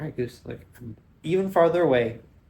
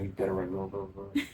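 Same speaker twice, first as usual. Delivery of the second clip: low, taunting mutter under the breath; 4 semitones lower, 9 dB quieter than usual. Imitating a goose muttering after the speaker walks away: goose muttering under breath. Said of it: "under his breath".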